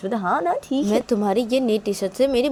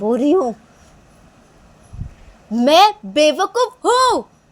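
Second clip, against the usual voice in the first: high-pitched, drawn-out shout at full voice; 5 semitones higher, 4 dB louder than usual. Retelling a reply given after being asked to shout: imitating a shout. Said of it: "ऐसे ही चिल्ला के, ऐसे ज़ोर से बोलो".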